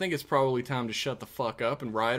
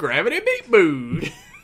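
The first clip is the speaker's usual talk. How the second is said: goofy put-on voice, very loud and high; 5 semitones higher, 11 dB louder than usual. Repeating a phrase, putting some sort of funny voice on it. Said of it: "putting some sort of funny voice on it".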